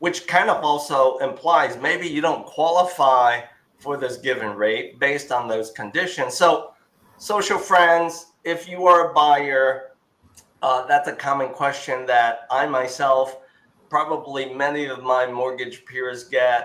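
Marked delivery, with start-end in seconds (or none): none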